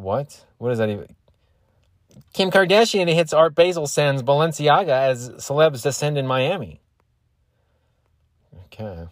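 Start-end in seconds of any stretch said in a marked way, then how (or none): 2.3-6.8 loud, high, gossipy tabloid news anchor delivery. Speaker reading out celebrity headlines: TMZ voice. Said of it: "Can I try to do the TMZ voice?".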